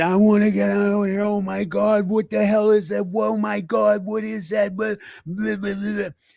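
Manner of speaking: put-on frantic, freaked-out, panicked screaming. Retelling how his buddy reacted on first seeing it, imitating a buddy screaming. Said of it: "He's screaming".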